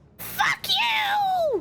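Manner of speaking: crazed, throaty, very high, shrill creature screech. Game master voicing a bleeding manticore as it collapses, crazy guttural voice. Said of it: "you hear it say in this crazy guttural voice".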